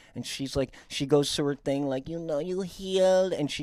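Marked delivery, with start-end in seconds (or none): 2.1-3.3 higher, fake, put-on Latin American Spanish accent.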